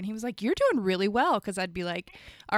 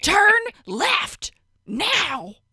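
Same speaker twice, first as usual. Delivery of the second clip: put-on abrupt loud yell, much higher pitch; 12 semitones higher, 8 dB louder than usual. Recalling the voice that yelled directions while driving, imitating an abrupt loud yell. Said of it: "He was very abrupt and loud".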